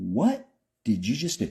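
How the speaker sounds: fake-sweet disbelief, swooping pitch. Recounting a reply to a woman while the whole room waited: retelling nicest disbelieving voice. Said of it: "in my nicest, I can't believe you just freaking did that voice".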